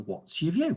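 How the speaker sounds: pitch climbs on the word view. Intonation practice, modelling the question with rising intonation on view. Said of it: "Our intonation should be rising".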